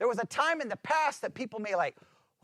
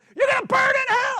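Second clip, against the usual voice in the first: piercing, shrill, very high, very loud scream; 11 dB louder than usual. Describing people at LGBTQ events in videos, imitating them screaming at people. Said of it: "they're just screaming at people".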